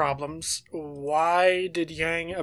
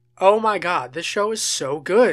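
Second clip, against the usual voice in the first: mocking, sarcastic tone; 4 dB louder than usual. Speaker makes a remark, then labels it sarcasm; sarcastic. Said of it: "That's sarcasm".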